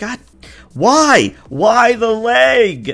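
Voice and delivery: anguished, very high, loud pained cry, "leg" drawn out. Game master voicing a character just shot in the leg, crying out in pain. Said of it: "cries out in pain and says".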